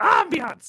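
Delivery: bird voice, high and shouted.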